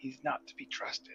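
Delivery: very quiet, barely voiced whisper. Warning fellow players in character about a suspicious host: whispering to colleagues. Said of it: "I whisper to my colleagues".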